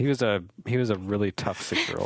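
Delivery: ordinary talk, nothing marked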